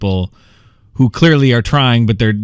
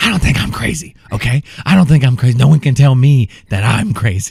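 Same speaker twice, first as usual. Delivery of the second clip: stage whisper, fully voiced, put-on half-whisper. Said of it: "saying this in kind of a whisper".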